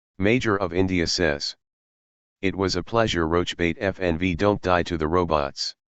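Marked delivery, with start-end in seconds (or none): none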